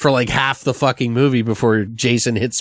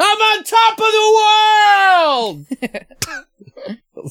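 mock very high scream, "of" long and drawn-out; 4 dB louder than usual. Retelling a movie's opening scene, imitating DiCaprio screaming. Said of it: "he's screaming".

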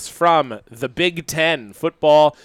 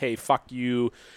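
put-on curt, snarky, short muttered remark; 2 semitones lower, 8 dB quieter than usual. Acting out a player annoyed by a reporter's question: imitating a snarky short answer. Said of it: "give this kinda short little snarky answer like".

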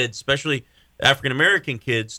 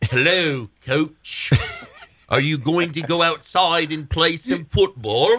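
laid-on put-on English accent; 4 semitones higher than usual. Speaker plans to talk like this all day, even at the mirror: English accent. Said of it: "I want to have an English accent".

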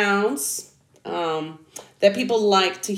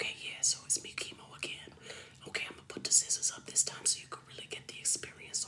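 hushed ASMR voice, much quieter. Doing an ASMR bit with scissors for the viewers, talking quiet. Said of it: "I gotta talk quiet".

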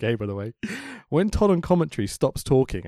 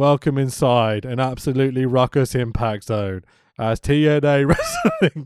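bored, flat, unenthused wrestling announcer delivery; 4 dB louder than usual. Recapping a wrestling show, the speaker copies its opening announcer: imitating an unenthused announcer. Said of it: "I'm going to do it like he did it".

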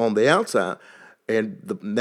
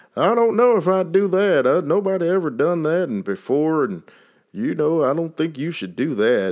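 put-on strong Texas accent, pitched up; 6 semitones higher than usual. Quoting what mentors might say, in a strong Texas accent. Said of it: "hear my Texas accent come out real good".

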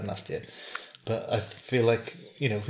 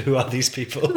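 mock loud, thoroughly fed-up, very exasperated tone; 3 semitones higher, 7 dB louder than usual. Retelling what the other speaker asked about new followers: imitating a very exasperated tone. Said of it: "In a very exasperated tone".

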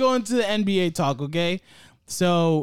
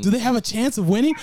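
mocking, put-on echo of the words; 4 semitones higher than usual. Repeating the other speaker's question as he said it: imitating him. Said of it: "That's how you".

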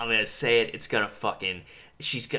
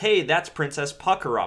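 mock high yell, called out across distance; 6 semitones higher, 4 dB louder than usual. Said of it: "an extra who yells".

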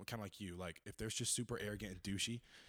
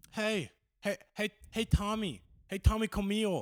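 put-on kid voice, higher and louder; 11 semitones higher, 9 dB louder than usual. Complaining that kids can't pronounce their R's, imitating a kid's voice. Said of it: "Why is your kid voice so good?".

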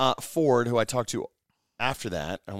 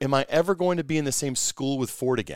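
plain

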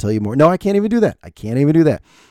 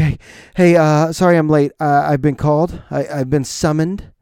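put-on, breathless, out-of-breath voice. Retelling a latecomer apologizing at jury duty check-in: imitating someone out of breath. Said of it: "he looks like he's out of breath".

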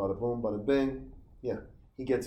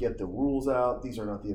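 usual speaking voice

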